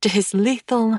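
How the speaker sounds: usual speaking voice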